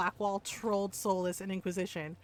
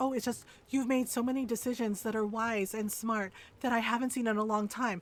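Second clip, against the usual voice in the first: put-on condescending voice. Retelling what a game character told the player's Inquisitor: imitating a condescending tone. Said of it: "that's not condescending".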